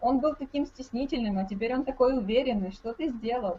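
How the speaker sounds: plain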